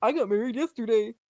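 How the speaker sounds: put-on old man's voice. Retelling what an old man said while the speaker proposed, in an old man voice. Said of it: "love the old man voice".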